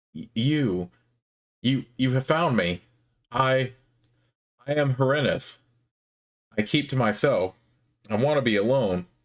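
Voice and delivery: slow, trembling, wavering voice with halting stammer. Voicing a cowering mage who has been found: wavering voice. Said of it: "He says in a wavering voice".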